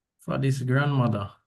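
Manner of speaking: ordinary talk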